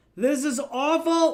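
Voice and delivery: high, loud, slow scream. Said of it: "I just started screaming".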